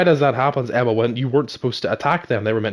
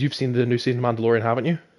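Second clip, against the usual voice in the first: ordinary talk, nothing marked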